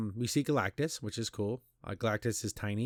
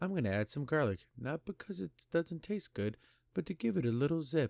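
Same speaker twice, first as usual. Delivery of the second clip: very soft-spoken, hushed, high little voice; 5 semitones higher than usual. Mocking a movie scene, imitating Ben Grimm's very soft voice. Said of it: "talking in a very soft voice".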